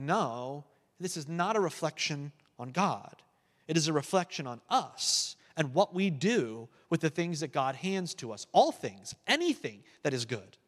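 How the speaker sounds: plain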